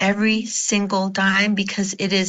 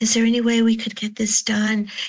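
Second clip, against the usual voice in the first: cowering, meek, timid tone; 2 semitones higher than usual. Describing how people ask for something, demonstrating a cowering, timid way of asking. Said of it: "in a cowering way to say".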